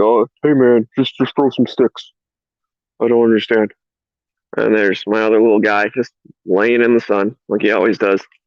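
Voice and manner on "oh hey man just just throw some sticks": speaking as a puppy. Showing the puppy on camera and voicing the puppy's thoughts. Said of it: "He's like".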